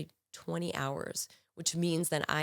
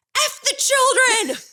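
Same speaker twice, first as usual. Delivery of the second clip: shrill, shrieking scream at the top of the lungs; 14 dB louder than usual. Retelling what a drunk patient yelled at staff: imitating a yell at full volume. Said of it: "she yells at the top of her voice".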